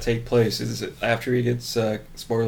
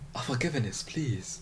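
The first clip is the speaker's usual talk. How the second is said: very quiet, hushed space alien voice, broken accent; 11 dB quieter than usual. Riffing in a back-and-forth with another speaker, Star Wars character impression. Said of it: "that's a good impersonation of".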